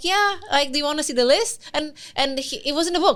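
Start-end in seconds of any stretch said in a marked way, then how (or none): 0.0-1.6 casual, unbothered, offhand, nonchalant tone. Retelling how he answered about the list: imitating a nonchalant reply.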